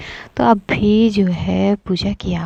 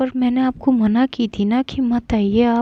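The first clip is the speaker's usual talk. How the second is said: plain reading voice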